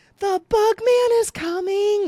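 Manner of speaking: very high, loud, stretched-out yell. Retelling how parents warned of the fog truck: imitating parents yelling. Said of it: "my parents would start yelling".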